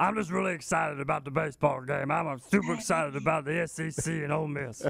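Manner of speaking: raspy, rough, creaky caricature character voice. Doing an impersonation of a guest while the guest listens: Mincy impersonation. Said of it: "a pretty good Mincy impersonation".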